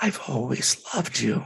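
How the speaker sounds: faint, breathy, high, almost inaudible whisper. Retelling what a woman whispered after pulling the speaker close: breathy, almost inaudible whisper. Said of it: "she whispered in this breathy, almost inaudible voice".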